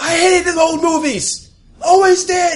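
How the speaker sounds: very high, shrill yelling. Improvising a scene indoors, yelling. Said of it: "we're gonna need you to stop yelling".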